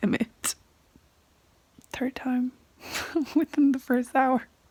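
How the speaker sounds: crying while talking. Watching a sad movie and talking to the camera, crying while talking. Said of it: "I need to stop crying".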